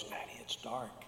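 put-on, frightened little child's scared whisper. A father recalls his small son waking in the dark at night: imitating a child's fearful voice. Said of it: "with fear in his voice".

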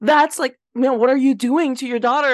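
alarmed, worked-up, freaked-out blurt. Retelling how a girl in a store reacted to a mother: imitating someone freaking out. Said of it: "freaking out".

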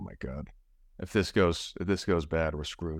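plain

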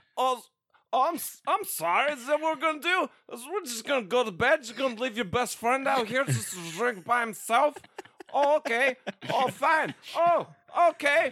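put-on shrill, very high, loud drunk voice. Retelling a drunk friend named A-dub at the bedroom door: imitating drunk A-dub. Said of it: "I got a drunk A-dub outside of my door".

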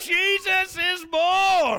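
very loud, very high excited cheer, stretched out. Leading the room again after asking for more: bigger excited shout. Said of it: "I want more of a woo".

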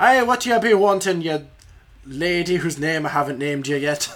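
heavy, thick Irish brogue, laid on. Voicing a character who greets a lady at the bar, in a thick Irish accent. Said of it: "in his thick Irish accent".

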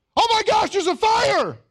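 very high, loud, thrilled, excited alarmed tone. Showing listeners how a more excited delivery would sound, an excited fire alarm. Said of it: "If I said it like that".

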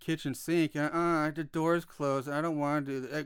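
mock monotone delivery. Mocking how an actor talks through an entire movie, imitating a flat monotone. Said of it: "That's how he talks the entire movie".

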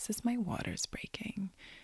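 whispered under the breath.

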